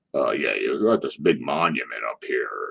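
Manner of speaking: low, deep-voiced put-on voice, way down low. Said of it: "the little guy talks with a deep voice".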